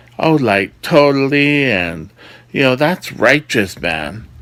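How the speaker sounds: put-on valley voice. Warning job seekers against silly interview answers, in a valley voice. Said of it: "I'll do a valley voice".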